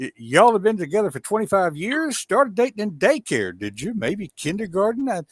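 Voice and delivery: blended Georgia and Texas accent.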